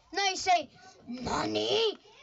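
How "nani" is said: said angrily. Showing how the line should be said: angry voice. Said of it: "You say "Nani" with an angry voice".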